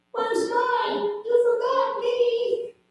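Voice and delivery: very high, soft, small squeaky voice. Speaker retells a voice from the back of the car, in a little squeaky voice. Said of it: "this little squeaky voice in the back".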